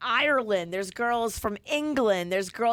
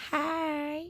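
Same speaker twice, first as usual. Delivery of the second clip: put-on North Carolina accent, drawn-out, pitched-up "hi"; 5 semitones higher, 6 dB quieter than usual. Showing an attempt at a put-on North Carolina accent. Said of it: "me trying to do a North Carolina accent".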